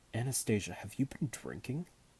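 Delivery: ordinary delivery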